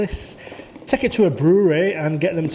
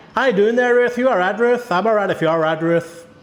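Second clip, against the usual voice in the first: fake, put-on Irish accent; 4 semitones higher than usual. Speaker, recalling a two-week trip, addresses ruth in a put-on irish accent. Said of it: "I like to put the Irish accent on".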